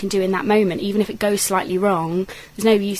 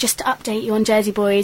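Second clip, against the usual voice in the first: ordinary delivery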